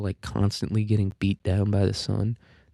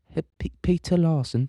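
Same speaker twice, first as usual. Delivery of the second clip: put-on British accent, R dropped, high pitch; 7 semitones higher than usual. Showing how the Brits would say Larson: imitating British accent dropping R's. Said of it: "That's how they would say it".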